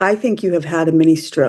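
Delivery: ordinary talk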